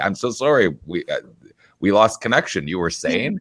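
put-on cheerful tone, audibly smiling. Retelling calling back a lead who hung up: imitating a smiling apology. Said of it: "I'll say it with a frickin' smile on my face".

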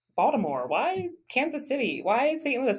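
mock doubting, skeptical voice, sing-song. Speaker mimics their naysayers; naysayer voice. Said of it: "I'm using that voice for a purpose because they're like my naysayers".

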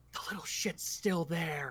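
hushed whisper, close and leaned in. A player's character leans in close to the prince, whispering in his ear. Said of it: "and just whisper in his ear".

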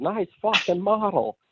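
play-acted very high-pitched, wild holler. Speaker retells a favorite movie scene, imitating Beetlejuice yelling. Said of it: "he yells".

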